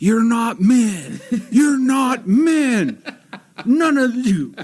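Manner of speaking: high, slow, laughing mock yell.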